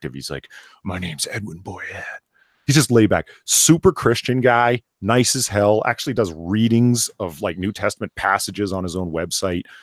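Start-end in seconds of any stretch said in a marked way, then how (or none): 0.8-2.0 very quiet, grizzled noir-detective drawl. Describing a laid-back guy, the speaker mimics him, Edwin Boyette's noir-detective voice. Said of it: "sounding like a grizzled noir detective".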